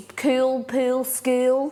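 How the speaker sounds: broad Australian accent. Australian speaker demonstrating how they would sound speaking really Aussie: broad Aussie accent. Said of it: "you'd be speaking like this".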